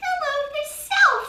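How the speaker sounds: wee little voice, very high. Narrating a baby rabbit answering Jeremy's hello, in a wee little Hazel voice. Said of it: "said a wee little voice".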